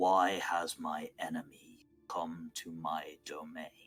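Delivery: echoing, resonant voice. Narrating the game, voicing a voice from deep in a pond, reverberating. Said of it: "a reverberating voice say".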